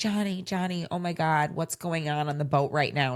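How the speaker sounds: put-on distraught girl voice, pleading. Retelling a girl on a show calling for johnny: imitating a distraught girl. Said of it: "She's, like, distraught".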